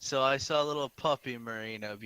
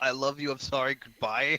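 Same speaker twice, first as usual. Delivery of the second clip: plain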